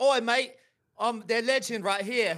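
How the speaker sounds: high, drawn-out put-on English accent slipping into Australian. Asked by the other host to do an English accent, attempted English accent. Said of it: "can you do a English accent?".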